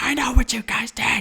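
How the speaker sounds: furious, high-pitched angry yell. Quoting a man who got out of his car to confront them, retelling an angry yell. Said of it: "just starts yelling at us".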